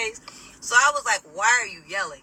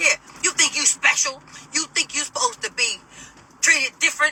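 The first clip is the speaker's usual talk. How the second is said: put-on high-pitched scolding yell; 6 semitones higher than usual. Retelling an angry woman's question, imitating someone yelling. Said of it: "why are you yelling?".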